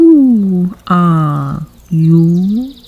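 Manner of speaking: drowsy, lazy, languid, sleepy drawl with you drawn out. Narrator reading the Caterpillar addressing Alice, in a languid, sleepy voice. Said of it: "addressed her in a languid, sleepy voice".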